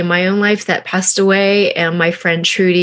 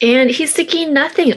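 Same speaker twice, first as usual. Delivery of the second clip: ordinary talk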